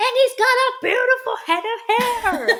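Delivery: put-on very high, worked-up, high-pitched yelling. Sharing a favorite quote from Tony's therapy session, imitating Tony yelling. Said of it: "and he yells".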